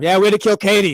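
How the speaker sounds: loud, blunt, carrying across the room. Retelling what a producer said on a live mic: imitating someone saying it loudly. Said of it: "That was loud too".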